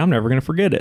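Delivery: put-on sudden accent of the American South. Retelling own past words during a quiz answer: Southern accent. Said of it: "Where did that accent come from?".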